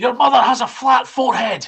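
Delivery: shrill, very loud, high, full-blast shouting. A player casts a spell at an owlbear by shouting at it: shouting. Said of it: "I'm just going to shout".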